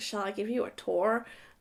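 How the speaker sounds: attempted American accent. Retelling a man offering a tour of his apartment: imitating his american accent. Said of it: "in his American".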